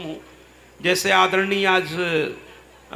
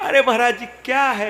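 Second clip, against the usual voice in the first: easy, relaxed delivery with laughter. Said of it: "एकदम इतने सहजता से वो बोल रहे थे".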